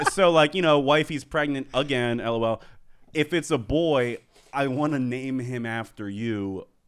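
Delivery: ordinary delivery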